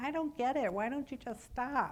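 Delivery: put-on voice of a little elderly lady. Recalling a woman from group therapy years ago, the speaker does a little old lady voice. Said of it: "that little old lady's voice in my head going".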